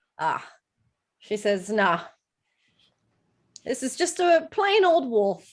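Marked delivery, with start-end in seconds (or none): 1.7-5.4 put-on slight Scottish accent, pitched up. Voicing an innkeeper asking what the guests want: slight scottish accent. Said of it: "She's, like, Scottish now".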